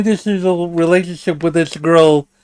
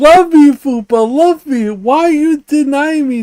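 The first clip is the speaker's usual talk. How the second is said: play-acted whiny crying plea, pitched very high; 9 semitones higher than usual. Mocking a pleading teenage boy with a boombox: imitating Phantom crying. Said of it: "now crying like".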